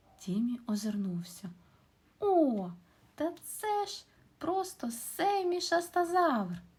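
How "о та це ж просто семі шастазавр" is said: very high, loud, drawn-out exclamation. A narrator reads a character's reply to his friend's question, exclaiming. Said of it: "вигукнув Тіммі".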